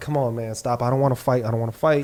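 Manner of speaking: pleading, near-begging tone. Retelling how a man backed away from a fight: imitating someone begging. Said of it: "almost begging".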